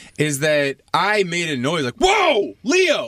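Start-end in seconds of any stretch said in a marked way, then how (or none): 2.0-3.1 mock very high-pitched, sudden yell. Retelling a moment of startling the dog: imitating own yell. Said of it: "just yelled".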